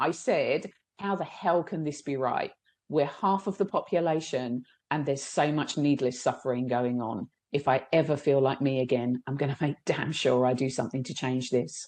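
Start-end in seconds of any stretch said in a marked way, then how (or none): none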